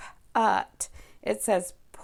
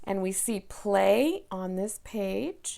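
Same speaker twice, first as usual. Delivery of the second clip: ordinary talk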